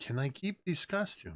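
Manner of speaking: hushed, soft half-whisper under the breath. Half-whispering to a father carrying his sleeping child: half-whisper. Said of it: "I just whisper to him".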